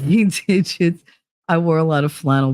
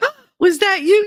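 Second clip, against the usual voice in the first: put-on little old lady voice, higher. Joking about pinching butts later in life: playing a little old lady. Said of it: "that little old lady pinching dudes' butts".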